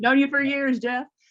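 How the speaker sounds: mock chummy voice, high-pitched, loud gushing. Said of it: "we're best friends".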